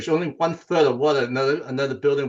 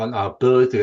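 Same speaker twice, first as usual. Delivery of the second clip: ordinary talk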